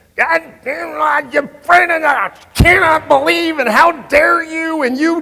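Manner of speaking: very high, very loud, shrill angry screaming rant. Retelling phoning Mark, who picked up already screaming at the speaker; retelling a screaming rant. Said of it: "he's screaming at me".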